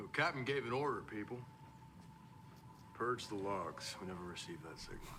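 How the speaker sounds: put-on abrupt, sudden switch into Southern American accent. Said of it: "he had, like, a southern accent there all of a sudden".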